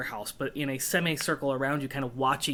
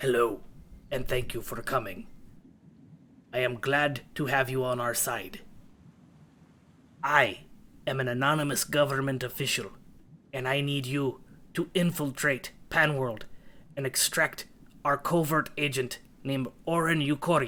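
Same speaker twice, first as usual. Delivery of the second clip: deep, gravelly, electronically disguised voice. Voicing an anonymous official on a screen: deep gravelly disguised voice. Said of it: "so it's a very deep, gravelly, disguised voice".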